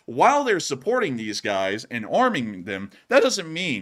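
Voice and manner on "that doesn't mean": voice cracking, pitch breaking on "doesn't mean". Explaining news about Ukraine, voice crack. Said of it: "sorry for the voice crack there".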